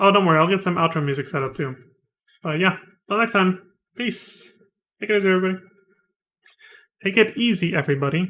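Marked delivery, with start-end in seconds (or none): 5.0-5.6 hurried, rattled-off speech, words tumbling out. Signing off to everybody before getting food: spoken too fast. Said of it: "I spoke too fast there".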